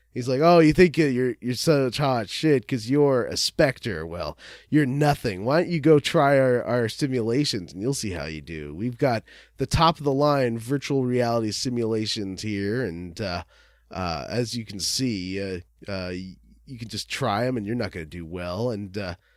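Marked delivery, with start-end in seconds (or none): none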